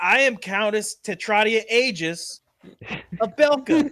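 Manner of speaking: loud, high, very slow, intimidating noblewoman voice. Voicing a countess getting in a woman's face: intimidating noblewoman voice. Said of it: "she's gonna get in her face".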